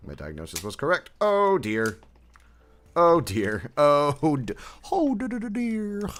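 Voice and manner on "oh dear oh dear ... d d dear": very high, slow, drawn-out stuttering little squeaky voice. Reacting while building, saying a Piglet catchphrase: Piglet voice from Winnie the Pooh. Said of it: "I always say that with the Winnie the Pooh voice".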